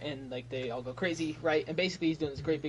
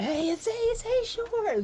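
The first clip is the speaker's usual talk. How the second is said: mock very high, swooping, thrilled excited call; 6 dB louder than usual. Voicing excited folk greeting a hero: excited crowd voice. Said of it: "they're all kind of, like, excited for him".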